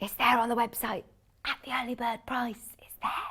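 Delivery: hushed half-whisper, kept under the breath. Mentioning a website price while others sit in the same office, half-whispering. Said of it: "I'm whispering".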